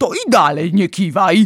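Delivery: severe, no-nonsense tone. Narrating, the giant answers the girl's protest; stern. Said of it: "rzekł Wielkomilut surowo".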